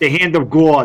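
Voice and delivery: clumsy, failed attempt at a Boston accent. Talking football picks, the speaker repeats a phrase, attempting a boston accent. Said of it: "I cannot do a Boston accent".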